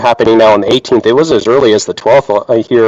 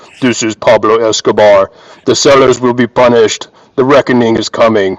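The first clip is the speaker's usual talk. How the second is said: distorted, electronic, disguised voice-changer voice. Retelling how a chat member speaks through a voice changer: imitating a voice-changer voice. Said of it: "He comes with a voice changer. He's like".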